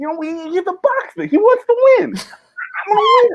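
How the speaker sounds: very high-pitched, fighter-style boxer voice. Speaker listing impressions you are allowed to do, doing a Mike Tyson impression. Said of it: "but you can do Mike Tyson".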